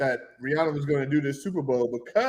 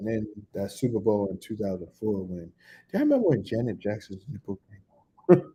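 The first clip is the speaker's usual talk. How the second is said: less excited, toned-down, much lower pitch; 6 semitones lower than usual. Speaker redoing a take on cue, delivering it with less excitement. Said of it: "Let's let's try that again".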